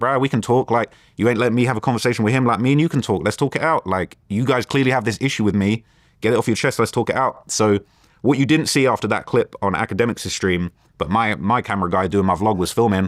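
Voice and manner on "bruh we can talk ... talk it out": ordinary delivery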